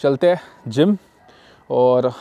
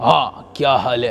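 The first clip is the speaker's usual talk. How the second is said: put-on, deliberately deep and heavy voice; 3 semitones lower than usual. Imitating how someone talks for the camera, in a put-on deep voice. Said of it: "ऐसे बात करते हैं ... लोग दिखाना चाहते हैं थोड़ा ज़्यादा आवाज़ भारी, जानबूझ के करते हैं".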